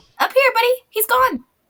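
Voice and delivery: very high, small, squeaky voice. Voicing an unseen speaker from up above, in a tiny little voice. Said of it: "you hear a little voice go".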